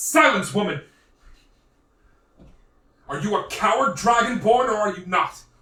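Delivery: very loud, high-pitched shout at full volume. Game narrator voices a man who turns to a woman and shouts. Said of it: "And he turns and shouts".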